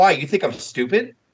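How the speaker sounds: mock-angry outburst. Recounting a TV segment, acting out a guest's reply as a mock-angry outburst. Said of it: "he was really angry".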